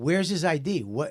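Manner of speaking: plain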